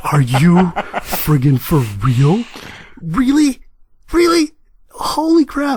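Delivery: high, stunned cry of disbelief.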